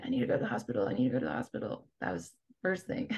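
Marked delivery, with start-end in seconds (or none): 0.0-1.9 repeated hushed whisper under the breath. Retelling being carried injured off a mountain: imitating own past whisper. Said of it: "I kept whispering it".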